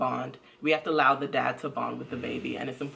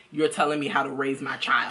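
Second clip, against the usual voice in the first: normal talking voice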